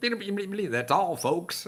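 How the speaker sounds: very high-pitched, loud, squeaky cartoon voice. Describing a cartoon button, doing the line as Porky Pig: Porky Pig voice. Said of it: "Porky Pig goes".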